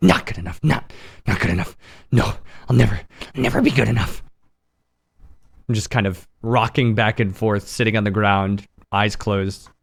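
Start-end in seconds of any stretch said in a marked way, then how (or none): 0.0-4.2 fast, whispered, muttered speech. Playing a character facing the corner, speaking to himself: whispering to oneself. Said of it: "like whispering".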